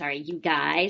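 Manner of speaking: sarcastic comeback thrown straight back. Retelling a character's reply in a show: imitating a sarcastic retort. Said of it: "she says sarcastically".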